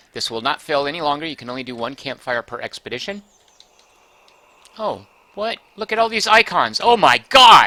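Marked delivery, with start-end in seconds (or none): 6.9-7.7 very loud, high, startled yell of surprise. Reacting to all the new icons on the game screen, yelling. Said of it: "Sorry to yell in".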